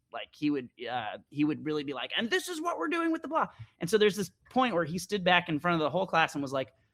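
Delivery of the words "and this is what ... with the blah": rowdy, boisterous, very high-pitched voice. Retelling a class about the DC sniper, imitating the boisterous instructor. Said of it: "This guy was like really boisterous".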